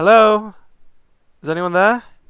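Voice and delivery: calling out, very loud and high. Calling out into the jungle to an unknown creature, with a slightly raised voice. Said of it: "I'm gonna raise my voice a tiny bit".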